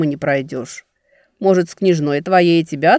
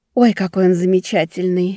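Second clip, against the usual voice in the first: in a whisper; 3 semitones higher than usual. A girl speaks to her companion, whispered. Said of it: "шепнула Велька спутнику".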